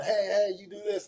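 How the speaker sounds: play-acted shouted call. Retelling coaching several athletes at once: imitating own yelling. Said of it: "and I'm yelling".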